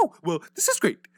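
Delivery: very high, shrill, blaring caricature voice. Mocking an actor while complaining about him: Jesse Eisenberg voice. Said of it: "That's literally how he sounds to me".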